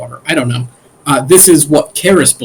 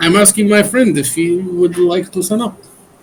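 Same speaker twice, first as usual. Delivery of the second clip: bad, failing, slow put-on Spanish accent; 4 semitones higher, 3 dB quieter than usual. Role-play character answering what the group is trying to do, bad Spanish accent. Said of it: "I cannot keep this stupid Spanish accent".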